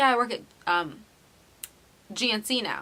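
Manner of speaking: ordinary talk, nothing marked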